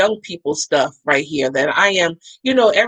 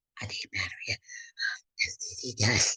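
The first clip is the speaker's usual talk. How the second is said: very quiet, embarrassed, ashamed whisper; 10 semitones lower, 15 dB quieter than usual. Retelling asking clinic staff for an STD test: imitating own whisper. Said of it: "I'm whispering".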